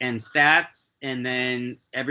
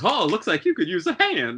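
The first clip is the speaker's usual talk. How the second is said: high, sing-song elephant character voice; 5 semitones higher than usual. Voicing an elephant with a tambourine offering a player help: voicing an elephant with a tambourine. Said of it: "that elephant with the tambourine just strolls by and goes".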